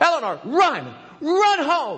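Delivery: very high, loud yelling.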